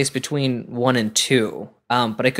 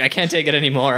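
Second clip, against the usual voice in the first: plain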